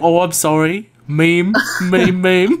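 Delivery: fake, put-on mock English British accent. Imitating a guy's response when called out on it, in a mock english accent. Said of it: "I apologize to everyone out there with an actual English accent".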